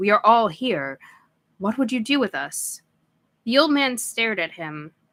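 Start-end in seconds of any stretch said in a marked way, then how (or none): 0.0-2.8 deep, rolling voice with swooping pitch. Reading a story aloud, a son addressing his father: deep booming voice. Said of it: "in his deep boom of a voice".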